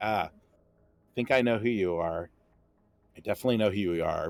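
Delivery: low, smug, knockoff noir-detective voice. Narrating the scene, the speaker voices a halfling detective addressing Vincent: smug halfling noir detective. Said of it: "has now it's it's basically [name] if he was a knockoff noir detective. / a little halfling, curly hair. It's fantasy art because I couldn't find anything better, but this captured sort of his smug as".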